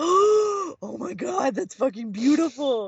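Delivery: awed gasp, high and slow.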